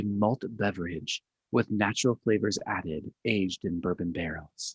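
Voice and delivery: haughty, snooty, put-on hoity-toity voice. Speaker presenting a beer reads out its label description in a mock hoity-toity voice. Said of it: "his voice changed there".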